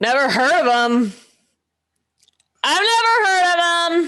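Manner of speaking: shouted, yelling delivery. In a recording session, an actor answers someone who yelled a question: yelling. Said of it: "and you're yelling".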